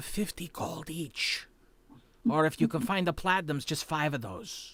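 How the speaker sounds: very bad, poorly hushed stage whisper. He leans toward a companion and speaks in a very bad stage whisper. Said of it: "in a very bad stage whisper goes".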